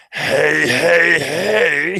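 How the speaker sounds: each "hey" stretched out long and high-pitched. Greeting a viewer in the chat: Fat Albert voice. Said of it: "In my best Fat Albert voice".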